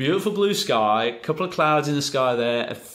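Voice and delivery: put-on broad Australian accent, laid on thick. Retelling what a man said as he looked around, strong Aussie accent. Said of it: "my very best impression of a, a strong Aussie accent".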